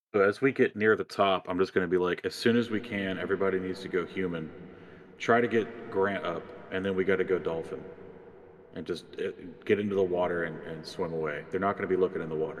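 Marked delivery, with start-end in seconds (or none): none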